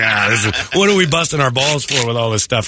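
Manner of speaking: usual speaking voice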